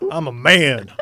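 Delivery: very loud, put-on Southern accent. Joking about being a man in a southern accent. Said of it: "I get Southern".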